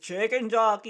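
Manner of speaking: raucous, loud crowd shout. Imagining a crowd heard through the cinema wall: imitating a crowd yelling. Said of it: "you can just hear in the other side".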